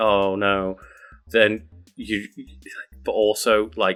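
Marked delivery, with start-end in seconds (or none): 0.0-0.8 put-on naive downtrodden voice. Describing a sitcom character, imitating naive downtrodden Charlie. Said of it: "naive, you know, downtrodden Charlie who's like".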